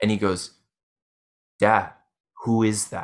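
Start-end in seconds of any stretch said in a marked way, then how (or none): 1.6-3.0 mock, audibly shaken and uneasy voice. Retelling a son asking who is standing there: imitating Atlas sounding shaken. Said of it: "audibly a bit shaken".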